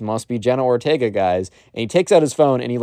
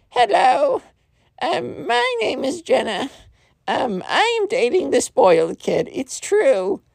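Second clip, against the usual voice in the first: bad put-on girl voice, much higher pitch. Retelling a prank phone call to a subscriber, in the crappiest fake girl voice. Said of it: "the crappiest fake girl voice ever".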